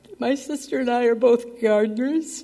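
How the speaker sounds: overcome with emotion. Speaking to relatives about the family's history, emotional. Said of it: "I'm very emotional here".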